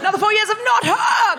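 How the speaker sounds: loud, triumphant shout.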